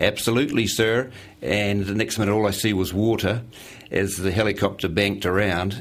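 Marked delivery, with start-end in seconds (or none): 0.0-1.1 put-on easy, lovely Texas accent. Retelling asking to get a bit closer, and the man's reply: imitating Ryan Brown's Texas accent. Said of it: "in this lovely Texas accent".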